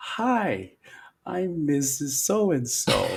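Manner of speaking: mock slow, over-enunciated speaking. Retelling a reading teacher's first greeting: imitating teacher speaking very slowly. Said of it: "the teacher said to me very slowly".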